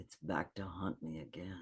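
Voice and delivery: play-acted bone-dry deadpan, very quiet, low, flat. Retelling what Vincent said to the speaker, imitating Vincent's deadpan. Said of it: "He's just so deadpan".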